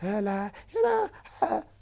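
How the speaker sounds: very high, squealing, mocking London-style voice.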